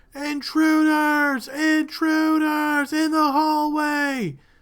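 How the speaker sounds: very high-pitched, alarmed yell at full lung power. Voicing a cultist warning of intruders: shouting at the top of his lungs. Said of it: "he is going to shout at the top of his lungs".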